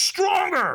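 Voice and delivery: mock shrill scream, very high and very loud. Retelling how the trainer screamed in the speaker's face: imitating a trainer screaming. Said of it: "he screamed at me really loud".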